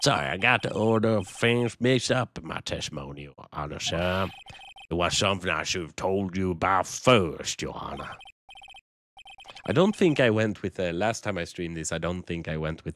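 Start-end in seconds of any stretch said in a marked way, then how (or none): 0.0-8.2 put-on southerner voice with southern accent. Streamer voicing a witness who corrects his testimony to the judge, southern accent. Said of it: "the southerner voice for him".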